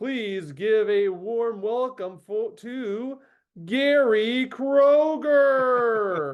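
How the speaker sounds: high show-opening announcer voice. Introducing a guest to everyone: Don Pardo impression. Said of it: "this is my best Don Pardo impression".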